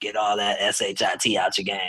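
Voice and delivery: raspy, gravelly voice. Retelling what the high school assistant coach used to say: imitating coach's raspy voice. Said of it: "He had a real raspy voice".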